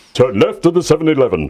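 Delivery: authoritative Shakespearean actor voice. Joking about Star Trek quotes, doing a Picard impression. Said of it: "that was my Picard impression".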